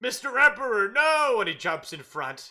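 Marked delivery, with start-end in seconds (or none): 0.0-1.4 shrill, full-force yell, very high and very loud. Voicing Captain Seymour leaping in front of the Emperor: Captain Seymour crying out. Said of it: "and Captain Seymour's like".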